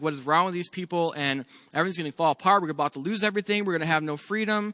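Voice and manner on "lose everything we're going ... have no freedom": ordinary talk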